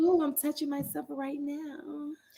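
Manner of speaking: put-on phone sex line voice. Joking about starting a phone sex hotline: put-on phone sex line voice. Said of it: "your voice ain't it".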